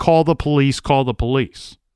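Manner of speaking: ordinary talk, nothing marked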